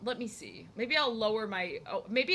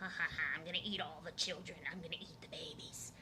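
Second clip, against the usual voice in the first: very hushed, low, cackling witch voice; 6 semitones lower, 10 dB quieter than usual. Speaker trying out the voices she can do, in her witch voice. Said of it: "my witch voice".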